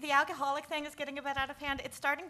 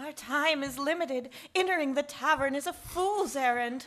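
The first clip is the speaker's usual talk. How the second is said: put-on ornate, flowery, odd old-English theatrical stage delivery; 4 dB louder than usual. A character speaks to a companion, in a weird flowery Shakespearean voice. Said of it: "the weird, flowery Shakespearean voice thing".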